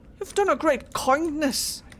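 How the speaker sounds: put-on try-hard Irish accent. Quoting a mage from Dragon Age two who tried to sound Irish. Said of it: "sounded like he was trying to be somewhere from Ireland".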